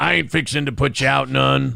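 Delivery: put-on gravelly voice. Speaker tries another take after saying the last one had no gravel, attempting a gravelly voice. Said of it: "You need to put gravel in your voice".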